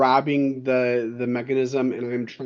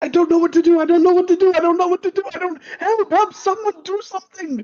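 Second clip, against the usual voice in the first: very high, loud, frantic, breathless panicked cries; 7 dB louder than usual. In a roleplay scene, someone collapses screaming in pain nearby: panicking. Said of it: "And I'm like panicking now".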